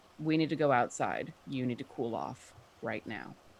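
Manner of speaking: low, quiet voice. In character, speaking to a taller companion, speaking quietly. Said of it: "say to him quietly and in Draconic".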